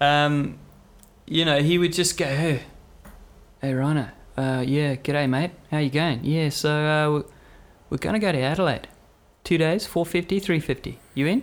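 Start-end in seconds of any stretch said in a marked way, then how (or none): 2.2-11.4 put-on Australian accent, man's voice. Retelling what a man would say when inviting him on a trip, put-on aussie accent. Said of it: "It's my Aussie accent".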